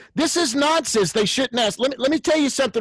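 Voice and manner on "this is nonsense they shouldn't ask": play-acted shouty, dismissive mild yelling. Imitating a man named David objecting to the question: imitating someone screaming. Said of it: "who's screaming right now".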